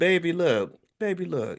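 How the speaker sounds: put-on slow, sweet, high cooing baby voice. Imagining how she would say her Instagram statement, in a sweet baby Tabitha Brown voice. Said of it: "in her sweet baby voice".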